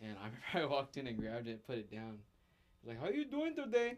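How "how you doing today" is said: high-pitched, bad fake Indian accent. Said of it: "worst Indian accent I've ever heard".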